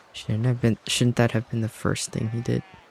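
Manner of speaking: muttering under the breath, very quiet and mumbled. Before meeting the captain, Ithir turns to Dog: quiet mumbled voice. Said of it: "goes in in a very like quiet, mumbled voice".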